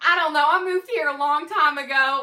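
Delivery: put-on Southern accent. Retelling pretending to be the new babysitter to the landscaper: really bad Southern accent. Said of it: "I start speaking in this really bad Southern".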